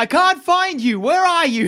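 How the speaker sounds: very high, long, drawn-out yell. Voicing a character calling out from somewhere in the darkness: Lilip yelling. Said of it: "you hear Lilip yelling".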